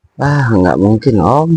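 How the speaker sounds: play-acted pampered, sweetly coy, spoiled voice. Retelling a woman's reply to a man, mimicking a coy, spoiled tone. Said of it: "dengan nada apa ya, nada manjanya gitu".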